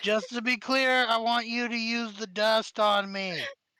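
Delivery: loud, high shouted yell. Voicing Scrambles batting fire off his body: Scrambles yelling out. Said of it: "he yells out".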